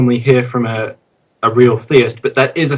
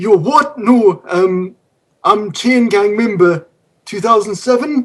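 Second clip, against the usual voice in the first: bad put-on Geordie accent, much higher; 8 semitones higher than usual. A caller to the show replies to the host in a bad fake geordie accent. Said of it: "take like a class to do the accents better".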